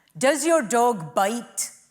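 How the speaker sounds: put-on Indian-flavoured French accent. Retelling a film clip of Inspector Clouseau asking a man about his dog, Indian-style French accent as Clouseau. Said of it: "That's just my Indian version of a French accent".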